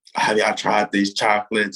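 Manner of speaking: really loud, acted yell. Retelling how Coach Drew ran into the room with chocolates: imitating Coach Drew's loud yell. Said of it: "And like really loud".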